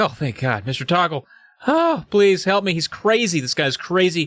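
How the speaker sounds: thankful, glad, relieved happy outburst. Retelling a rescued character greeting his rescuer: relieved and happy. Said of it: "now Jerry's happy. He's like".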